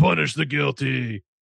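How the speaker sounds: put-on dumb, gruff voice. Retelling what someone said: dumb, gruff voice. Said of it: "in this dumb, gruff voice".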